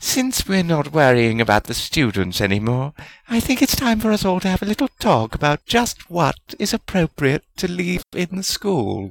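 sugary sweet with menace underneath. Narrator reads one founder speaking to the other founders, sweetly deadly. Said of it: "said in a sweetly deadly voice".

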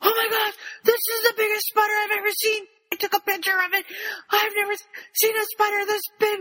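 very high-pitched, panicked, freaking-out babble. Retelling what a caller said on the phone, retelling a panicked caller. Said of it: "calm down".

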